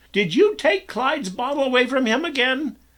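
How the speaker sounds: very high shrill scolding. Narrator reads a mother scolding her son, with high-pitched scolding. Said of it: "she scolded in a high pitched voice".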